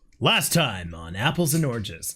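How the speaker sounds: tv recap-style announcer voice. Reading out a show script, taking on a TV announcer voice for the recap. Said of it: "Announcer voice".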